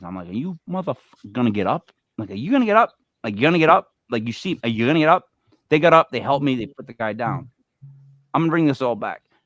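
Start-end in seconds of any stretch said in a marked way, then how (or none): 0.3-5.3 play-acted mean, menacing tone, pressed over and over. Retelling asking two bystanders to help hold a seizing man: imitating a mean demand. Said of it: "with probably the most meanest intentions".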